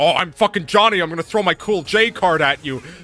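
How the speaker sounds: loud, mocking, jeering taunt. Retelling how Johnny laughs while grabbing: mocking Johnny impression. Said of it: "he laughs in my face when he grabs me, and he's like".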